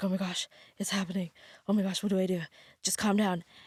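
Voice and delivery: put-on, hushed, rushed, panicked speech tumbling out. Retelling being stuck in sleep paralysis: retelling own panic. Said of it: "now I'm getting a little panicked".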